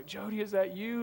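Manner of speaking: very hushed, trembling, quivery, terrified voice. Retelling a friend's question during a crazy drive, imitating Jeff's terrified quivery voice. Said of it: "in this real quivery voice was like".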